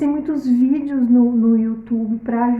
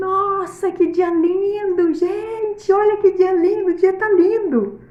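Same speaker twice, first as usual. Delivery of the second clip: high, drawn-out clown shout calling out; 7 semitones higher than usual. Retelling a clown passing by in the rain: imitating a clown shouting. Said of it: "Gritando assim".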